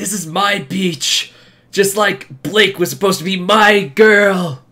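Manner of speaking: play-acted, loud, high-pitched bellowing villain yell. Joking about a villain at the beach, imitating Adam yelling. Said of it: "yelling about his ex-girlfriend".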